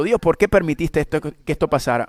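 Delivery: ordinary talk, nothing marked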